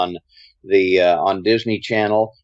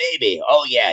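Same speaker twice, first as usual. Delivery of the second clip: gravelly low radio DJ voice; 2 semitones higher than usual. Recalling reading four pages as Wolfman Jack: Wolfman Jack voice. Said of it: "read four pages as Wolfman Jack".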